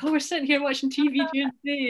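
play-acted thrilled, gushing, excited high voice. Retelling own words while watching tv during the day: retelling being excited. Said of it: "I was so excited".

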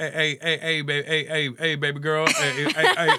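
high, unhurried, persistent, pushy flirting tone. Imitating a pushy friend hitting on a woman: imitating a friend hitting on women. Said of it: "he'd be like".

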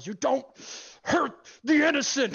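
screaming, high, loud battle yell.

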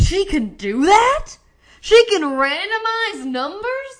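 high, loud, slow amazed disbelief.

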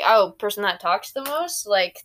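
ordinary talk

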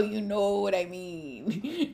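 put-on character voice, drawn-out and mean. Saying 'you know what I mean' in the Diego voice. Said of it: "In my Diego voice".

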